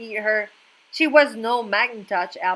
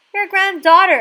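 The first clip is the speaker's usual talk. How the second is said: high, loud, squeaky put-on little voice; 9 semitones higher, 6 dB louder than usual. Reading a story aloud, the narrator knocks at Granny's door: squeaky put-on voice. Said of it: "I squeaked".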